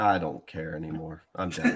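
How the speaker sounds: deflated, given-up, defeated, resigned voice. Giving up on predicting the Iron Bowl: sounding defeated. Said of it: "why you sound so defeated".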